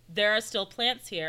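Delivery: ordinary delivery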